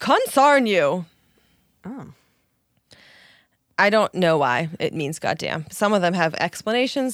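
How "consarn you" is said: high-pitched, emphatic shouting. Reading old-fashioned substitute curse words from an article aloud: shouting. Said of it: "I'm shouting these because they have exclamation points".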